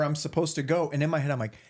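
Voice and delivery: ordinary talk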